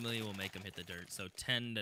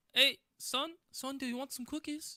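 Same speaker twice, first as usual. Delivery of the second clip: very high, terrible fake English accent; 4 dB louder than usual. Imagining who is at Flakes's door, voicing his mum: bad English mum accent. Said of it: "I'm terrible at accents".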